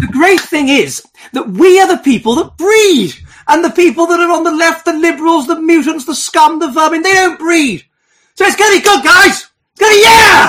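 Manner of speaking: very high, loud, chirpy, cheerful, happy voice. Asked to say it again, in a happier high-pitched voice. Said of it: "do you want me to convey it again in a kind of a happier, high-pitched voice?".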